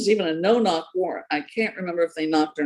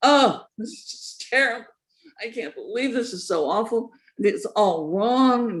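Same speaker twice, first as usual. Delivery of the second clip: play-acted, babyish crybaby whine; 3 semitones higher than usual. Mocking the governor's complaints about a news report: mock whining like a crying baby. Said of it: "he has been crying like a baby".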